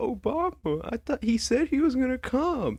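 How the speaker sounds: sobbing, very high, tearful crying voice. Retelling a sister's words after waking from laughing gas: imitating someone crying.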